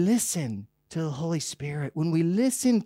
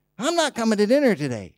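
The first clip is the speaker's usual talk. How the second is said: put-on acted, raised, high-pitched sulky teenage attitude; 5 semitones higher, 5 dB louder than usual. Telling a family-dinner story, voicing the teenage son upstairs with put-on attitude. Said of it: "with a little bit of an attitude".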